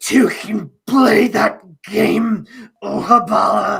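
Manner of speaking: gurgle in the voice. Game master voicing a woman whose sword exploded on her, addressing the party, gurgling voice. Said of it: "you hear this kind of gurgling voice".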